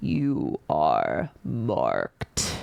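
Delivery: very deep rumbling bass, dropped low, swooping. Narrating a voice that brings a piercing headache; deep rumbling bass voice. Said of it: "a much louder and deeper voice that rumbles in a like bass so low".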